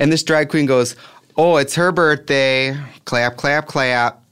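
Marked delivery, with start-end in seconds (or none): 1.4-4.1 put-on thick, heavy Midwestern accent, drawn out. Retelling a drag queen's line at a club: imitating an intense Midwest accent. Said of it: "she had the most intense Midwest accent".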